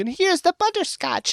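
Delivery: put-on high cartoonish granny voice. Mimicking a hired actor's caricature of an old woman: stereotypical old-lady voice. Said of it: "had to act like a stereotype of what an old person sounds like".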